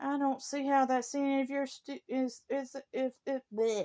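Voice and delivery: high, furious, angry stammer, tripping over words. Retelling what they said to a Volvo owner, still mad: angry stuttering. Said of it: "I'm stuttering".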